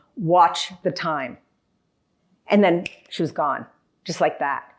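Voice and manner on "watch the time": solemn, weighty, very serious, grave tone. Retell the words that came through from her as a thought, imitating her very serious tone. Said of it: "she said in a very serious tone".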